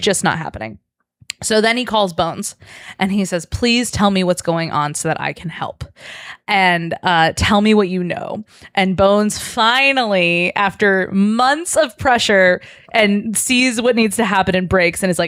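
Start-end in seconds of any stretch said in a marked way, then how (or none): none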